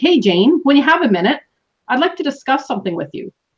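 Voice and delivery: assured, confident, self-assured phrasing. Showing a more confident way to ask someone for a talk, in a confident tone. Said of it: "I even said it with more confidence".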